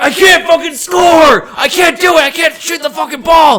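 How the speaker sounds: very loud, shrill, high-pitched furious yelling. Retelling how an angry player yelled during a game: imitating someone yelling angrily.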